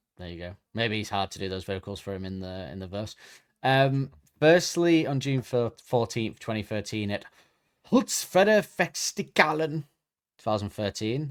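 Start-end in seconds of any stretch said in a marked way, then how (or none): 7.1-11.3 fake German accent, pitched up. Reading out a festival date and name in a put-on German accent. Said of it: "I don't know why I did German accent".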